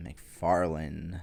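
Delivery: dry, sarcastic praise with a rising end. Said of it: "I say that very sarcastically".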